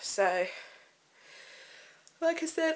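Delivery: speaking through a yawn. Vlogger talking to the camera, speaking through a yawn. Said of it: "I'm sorry I'm yawning".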